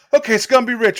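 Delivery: put-on showman host voice.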